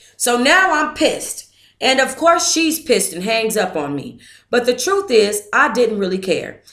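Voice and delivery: ordinary talk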